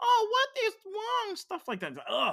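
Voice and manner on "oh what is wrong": put-on very high, shrill, loud, annoying baby talk. Mocking a character's accent in a remake's dub: imitating baby-talk voice. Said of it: "Just trying to imitate it".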